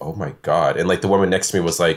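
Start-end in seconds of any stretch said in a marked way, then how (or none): 0.0-0.8 mock under-breath muttering, lower. Retelling a reaction in a quiet theater: retelling muttering under my breath. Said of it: "really under my breath".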